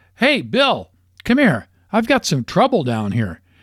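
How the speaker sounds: eager, excited call, high and swooping. Down in a ravine, he calls to his golfing partner, excitedly calling out. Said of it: "Jim excitedly calls out to his golfing partner".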